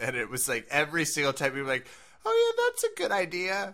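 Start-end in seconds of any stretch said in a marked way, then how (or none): 2.2-3.7 high, fake-polite voice. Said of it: "with that voice".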